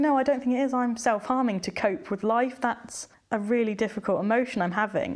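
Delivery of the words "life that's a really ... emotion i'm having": normal talking voice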